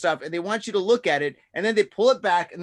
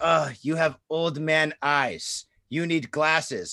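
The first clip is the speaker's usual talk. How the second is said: mock broken English, lower; 3 semitones lower than usual. Retelling what the eye doctor said: imitating broken english. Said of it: "in broken English".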